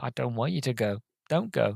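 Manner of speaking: mock tearful, crying voice. Retelling own reaction while watching the scene: retelling own tearful words. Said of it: "there's me in tears again".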